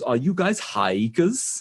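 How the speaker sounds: slow put-on German accent. Retelling a young German man walking up at the tent, imitating a German accent. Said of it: "he's a European guy, and German".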